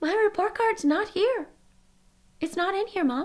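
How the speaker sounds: mock startled alarm, pitched very high. Retelling what they said to their mom back then, retelling a shocked voice. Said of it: "I said with a shocking voice".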